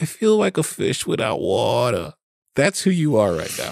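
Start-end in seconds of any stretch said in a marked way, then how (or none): 0.0-2.1 put-on cute little-girl voice, like a two-year-old, slower. Quoting a girl from an asthma commercial in a cute little-girl voice. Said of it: "cute little two-year-old voice".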